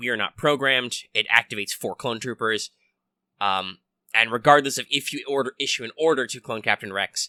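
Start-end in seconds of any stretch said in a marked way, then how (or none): none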